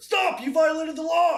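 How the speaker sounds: shrill, booming, high-pitched yell at full volume. Playing a voice from the cart after Nora stops the wagon, very loud shout. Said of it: "very loud voice come out from the cart".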